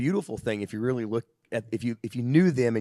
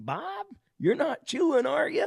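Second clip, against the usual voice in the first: put-on very high, swooping, scolding old-woman yell. Telling a story about grandma, imitating grandma yelling at him. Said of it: "And she yells at him".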